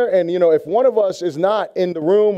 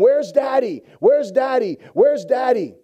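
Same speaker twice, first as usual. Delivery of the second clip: put-on child voice, screaming, calling out; 4 semitones higher than usual. Retelling a son calling out at night: imitating a child screaming. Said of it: "I hear him screaming from the other room".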